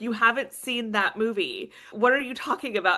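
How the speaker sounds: acted scolding, fed-up, exasperated shout. Retelling an argument with their grandmother in a grocery store, imitating her yelling. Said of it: "she's like yelling at me".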